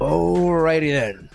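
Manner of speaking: goofy cartoon character voice. Podcast host ends a bit in an Ace Ventura impersonation. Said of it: "my Ace Ventura impersonation".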